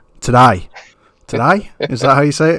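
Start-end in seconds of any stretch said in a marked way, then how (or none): 0.2-1.7 poor put-on Australian accent. Trying to pronounce a word the way he says it, bad Australian accent. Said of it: "really bad accent".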